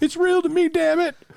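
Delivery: play-acted, very high, loud, tearful sobbing outburst. Retelling a viral video of a guy crying about wrestling: imitating a man crying. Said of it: "And he starts crying".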